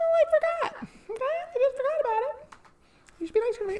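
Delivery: very high, soft, little put-on voice. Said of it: "I'm doing too much high voice today".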